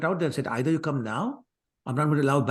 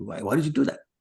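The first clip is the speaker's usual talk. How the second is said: put-on furious, very angry and demanding. Telling a story, the speaker voices a character confronting the mother: retelling a very angry question. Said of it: "so in a very angry tone".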